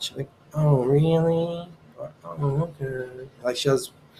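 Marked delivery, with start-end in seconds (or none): 0.5-3.1 very slow, level, flat, unexcited, almost sarcastic. Imitating how Robin reacts to news: imitating Robin's unexcited voice. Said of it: "she won't sound excited".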